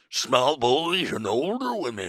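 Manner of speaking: put-on Southern sea captain voice. Doing the bit again for the others, in an old Southern sea captain voice. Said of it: "You talk like a Southern sea captain?".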